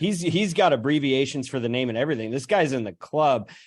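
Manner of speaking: ordinary talk, nothing marked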